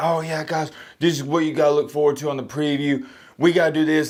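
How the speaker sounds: excited, high, hyped-up hype-man delivery. Imitating own usual preview video: imitating own hype hollering. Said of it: "screaming and I'm hooting and hollering".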